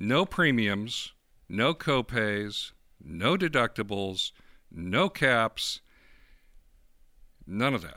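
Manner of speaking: slow, unhurried, deliberate, spelled-out delivery. Speaker describing a bill and wanting it to sink in, slow and deliberate. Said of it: "I'm saying this slowly".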